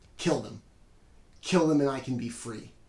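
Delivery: loud, with utter contempt and burning hatred. Voicing a possessed girl pointing at captives: utter contempt, burning hatred. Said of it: "she says it with just an utter contempt".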